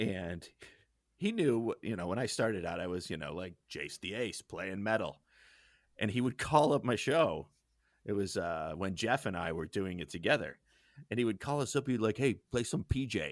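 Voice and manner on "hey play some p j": casual Wisconsin dude manner of talking. Retelling how a dorm neighbor from Wisconsin requested songs: imitating a Wisconsin dude's talk. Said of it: "This is how he talked".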